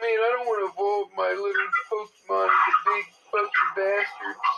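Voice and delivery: whiny complaining voice. Imitating the writer of an article he is reading: imitating someone whining. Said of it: "He's literally whining".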